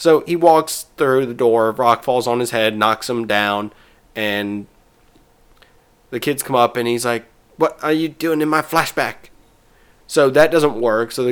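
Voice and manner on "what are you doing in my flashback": put-on half-hearted, high-pitched bratty kid voice. Retelling how the kids come up to Cartman after the rock hits him, do a half-ass Cartman impression. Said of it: "my half-ass Cartman impression".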